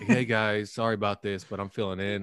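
put-on sad loner voice. Imitating Johnny as a really sad loner: imitating Johnny as a sad loner. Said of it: "Johnny's like just really sad loner".

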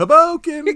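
shrill, full-volume shout, very high and loud. Mocking how another speaker says a place name: shouting like Street Fighter Two. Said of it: "Like she's fucking Street Fighter Two".

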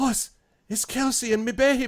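very high voice choking back a sob. Voicing a character who sees the baby asleep, choking back a sob. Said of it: "sort of chokes back a sob".

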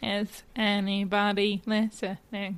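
flat, dead-level monotone, like a robot. Joking about tailoring things to bots, in a Dalek voice. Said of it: "I apparently just do Dalek".

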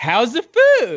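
mock very enthusiastic, high gushing, "food" stretched out. Mimicking how the question about the food was asked, mock-enthusiastic. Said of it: "you said it very enthusiastically".

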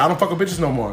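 ordinary talk

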